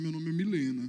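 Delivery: put-on deep, thick voice. Describing a person introducing themselves, in a deep thick voice. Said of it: "com a voz grossa e fala assim".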